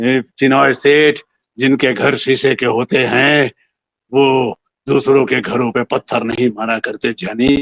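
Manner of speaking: gravelly film-dialogue delivery. Recounting how he delivered his famous film dialogue, in a raspy film-dialogue voice. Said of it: "खराश वाली voice".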